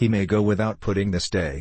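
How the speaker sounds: ordinary delivery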